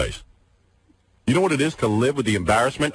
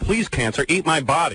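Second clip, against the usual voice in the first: plain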